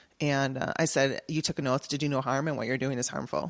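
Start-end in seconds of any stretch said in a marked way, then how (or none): 1.3-3.5 imitated angry voice. Retelling confronting a woman who was harming a sick husband: angry confrontation. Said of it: "but I was pissed".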